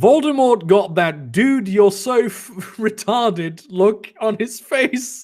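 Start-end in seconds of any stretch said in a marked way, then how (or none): none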